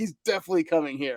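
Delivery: acted naive, gullible, overconfident, dead-certain tone. Mocking fans who read players' social media: mocking a fan reading social media. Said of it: "I hate people who, who look at social, uh, players' social media and like".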